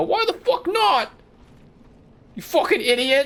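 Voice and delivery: put-on rude Cockney kid accent, squealed and yelled. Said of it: "Cockney Disco Elysium children".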